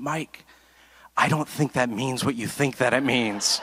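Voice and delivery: speaking just above a whisper. Retelling what an older woman said at church, imitating speaking just above a whisper. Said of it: "just above a whisper".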